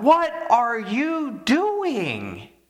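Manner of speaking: put-on startled yell, very high, swooping, drawn-out. Telling a story about a friend he woke at night, retelling the friend's yell. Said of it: "he just yells out".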